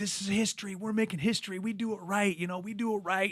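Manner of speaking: fired-up, high-pitched rallying yell. Retelling what was yelled while working the crowd: retelling his own yell. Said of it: "I'm yelling like".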